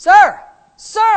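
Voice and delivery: high loud yelling.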